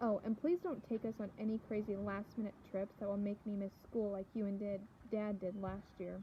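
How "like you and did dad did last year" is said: ordinary delivery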